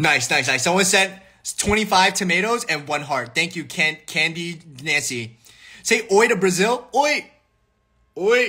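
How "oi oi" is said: Japanese-sounding accent, "oi" sounding Japanese, much higher pitched. Saying oi to Brazil for commenters: Japanese-sounding accent. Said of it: "I feel like I'm saying it like I'm Japanese".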